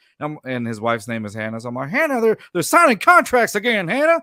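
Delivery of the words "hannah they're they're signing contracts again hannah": put-on high-pitched, loud whining voice with a Southern accent. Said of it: "Southern accent, uh, Cal McNair voice".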